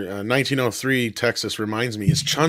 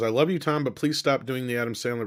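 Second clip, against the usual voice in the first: normal talking voice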